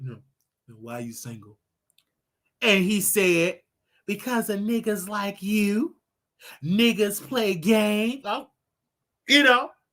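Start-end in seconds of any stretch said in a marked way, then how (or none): 0.0-1.6 put-on very deep, very quiet voice, hushed and quick. Retelling asking Nate why he is single, in a put-on deep voice. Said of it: "Put on my deep voice".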